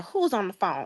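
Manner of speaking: acted-out sharp, snapping, demanding tone. Recounting a tense moment, the speaker re-enacts herself snapping at a woman with a phone. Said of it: "And I'm just snapping".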